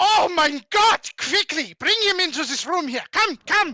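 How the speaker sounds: very high, loud put-on German accent. Bearded man reacting to hearing a friend has been shot, in a German accent. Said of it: "I wish I could do a German accent".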